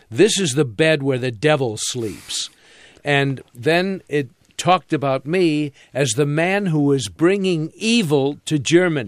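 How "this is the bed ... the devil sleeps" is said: normal talking voice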